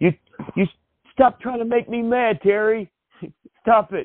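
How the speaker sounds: very high put-on anger with stifled chuckle. Retelling a wrestling bit where Raven is being taunted: imitating Raven trying to sound angry while corpsing. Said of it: "Raven's trying, you know, to sound angry, but you, you can almost hear him corpsing".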